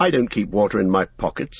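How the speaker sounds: plain reading voice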